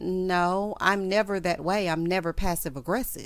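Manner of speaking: usual speaking voice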